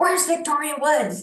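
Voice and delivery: demanding, high-pitched yell. Retelling how a man barged up the stairs: imitating someone yelling.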